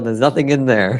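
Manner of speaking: play-acted, irritated, pissed-off annoyed voice. Retelling a joke about taking a dad's wallet: imitating an annoyed dad. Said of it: "He'll get pissed off".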